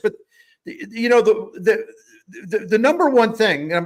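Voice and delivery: excited, high-pitched stammering, tripping over words. Listing a team's strengths to another speaker: stammering with excitement. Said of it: "I'm sorry I'm stammered today, I'm all excited".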